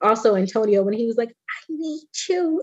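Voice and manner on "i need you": put-on very high, small, soft little kid voice. Speaker recalling a touching moment, imitating Antonio's little voice. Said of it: "his little voice".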